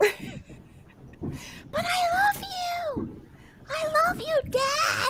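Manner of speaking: shrill, very slow, drawn-out dramatic movie yell. Quoting a line from a movie after being asked why yelling: yelling a movie line. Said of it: "That was from a movie".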